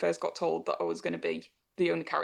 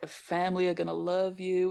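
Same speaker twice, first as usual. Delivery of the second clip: fake, taunting Southern American accent. Retelling playing a snatcher who mocks the victims, put-on southern accent. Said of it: "turn into a southern accent and be like".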